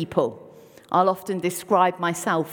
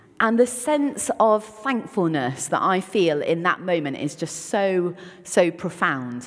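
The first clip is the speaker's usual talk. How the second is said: normal talking voice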